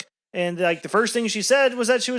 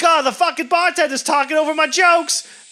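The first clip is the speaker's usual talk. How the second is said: loud, raised, pitched-up complaining yell; 8 semitones higher, 6 dB louder than usual. Retelling how a comedian yelled at the bartenders: imitating someone yelling. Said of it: "she's yelling at the bartenders".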